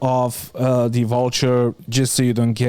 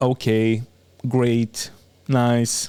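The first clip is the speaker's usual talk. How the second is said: mechanical, flat, monotone robotic voice. Trying to sound robotic, flat robotic voice. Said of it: "I'm trying to sound robotic".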